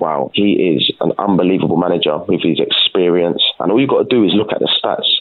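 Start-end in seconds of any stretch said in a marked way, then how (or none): none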